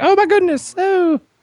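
very high, surprised exclaiming voice. Retelling a woman's reaction to being hugged, in a Mrs. Doubtfire voice. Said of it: "I do her voice it sound like Mrs. Doubtfire".

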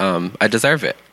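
ordinary delivery

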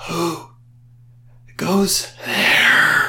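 breathy, ancient voice. A voice from the sarcophagus calls out as Cypress hears it, breathy ancient voice. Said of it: "A very breathy, ancient voice".

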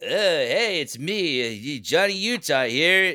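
very slow, halting, hesitant drawl character voice. Retelling a TikTok video done as an impression: Jeff impression. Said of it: "I was just doing my Jeff impression".

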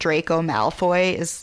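ordinary talk

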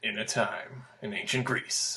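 breathy, hushed, whispered movie-trailer announcer voice. Talking about Altered Beast being set in ancient Greece, put on a movie trailer guy voice. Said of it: "I feel like I need to talk like the movie phone guy".

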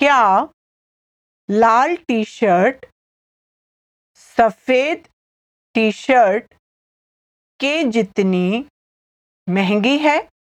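deliberate, slow, halting, word by word. Repeating a Hindi example sentence for learners, slowly. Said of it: "I'll say it again slowly".

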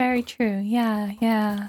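put-on demure voice. Imitating an actress's scene with a woman from elsewhere: demure manner. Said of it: "so demure and like".

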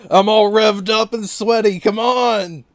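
put-on crazed hollering, very high, very loud, excited. Voicing Shimano during the massacre, calling out for Kazuma: Shimano, mock-excited yell. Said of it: "He's so excited".

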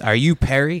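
put-on menacing, threatening tone. Speaker retelling how he was greeted on his first visit, imitating a threatening question. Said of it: "he says it like he's going to fuck me up".

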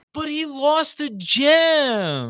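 put-on high, swooping kid-like whine, drawn-out "gem". Retelling Hartford confronting the butler in an episode, Hartford's kid-like complaining. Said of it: "Literally in that tone. Like a kid".

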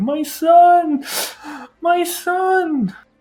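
very high, very slow, drawn-out sobbing wail. Retelling a scene where a mother reaches for her son, imitating a mother bawling. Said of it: "the mother is just absolutely bawling and crying".

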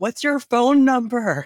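very high, loud shout. Character shouts to him where it's too loud to hear anything, shouting over noise. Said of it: "she's just shouting".

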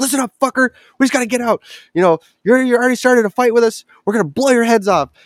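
play-acted very high, threatening yelling. Retelling a standoff with a hostile scav, the speaker re-enacts yelling threats down a hallway. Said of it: "I'm yelling at this guy down the hallway".

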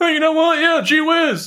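high, loud, mock cheerful tone.

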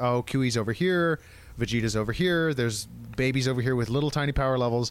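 ordinary talk

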